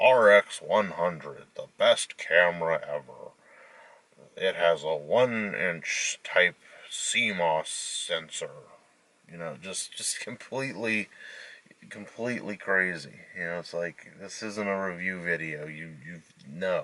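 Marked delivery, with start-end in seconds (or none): 0.0-8.5 slow, mechanical robot voice. Mocking reviews that only list specs, reading the specs: robotic voice. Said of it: "robotic voice".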